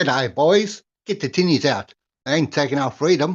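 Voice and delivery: faked Australian accent held throughout. Joking banter about someone being Aussie, in a put-on Australian accent. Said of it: "I could work on my Australian accent and say it for you".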